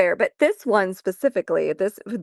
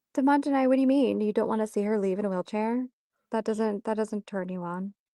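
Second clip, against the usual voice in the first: hushed half-whisper under the breath; 2 semitones higher, 5 dB quieter than usual. Asking a chat viewer a question about the story: half-whispering. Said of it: "the fact that you're whispering it too".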